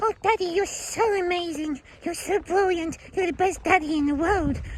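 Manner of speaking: silly little voice, pitched very high. Speaker shows how his Teddy side talks to him, in a silly little Teddy voice. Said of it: "my silly little Teddy voices".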